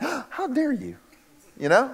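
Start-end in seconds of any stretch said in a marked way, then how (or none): 0.0-1.0 mock indignation, higher and quieter. Imagining a listener's reaction to being called little faith: imitating an offended listener.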